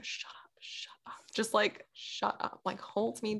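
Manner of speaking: soft, repeated whisper under the breath. Speaker retells what they whispered to the man holding them, re-enacting whispering. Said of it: "I'm literally like whispering to him".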